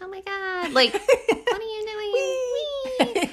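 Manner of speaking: very high, squeaky voice as if on helium. Guessing aloud how something sounded, in a Chipmunks helium voice. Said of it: "helium voice".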